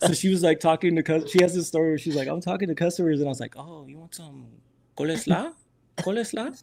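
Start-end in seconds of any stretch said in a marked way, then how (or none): 3.6-6.6 soft, broken English in fake Spanish accent. Retelling a woman's story of faking being bilingual with KFC customers, in a fake Spanish accent. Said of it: "like with the fake Spanish".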